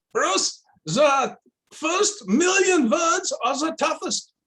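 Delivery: put-on very high-pitched German professor's accent. Bruce recalls what his tough PhD supervisor told him, in Max Neusser's German accent. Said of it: "said to me in that German accent of his".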